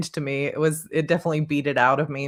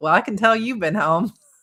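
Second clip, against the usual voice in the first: put-on Southern accent, pitched up; 6 semitones higher, 4 dB louder than usual. Quoting someone's reaction after the speaker returns from georgia, southern accent. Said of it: "I would come back to George".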